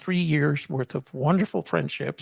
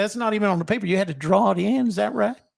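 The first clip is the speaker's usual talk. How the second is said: exaggerated, high Southern accent, drill sergeant voice; 5 semitones higher, 3 dB louder than usual. Retelling a sergeant questioning his choice, in an exaggerated Southern accent. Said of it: "He had he had a Southern accent, but they always exaggerated".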